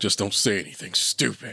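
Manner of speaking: low growling voice. Narrator reads a character's line; lowered, growling voice. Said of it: "He lowers his voice, growling the last few words".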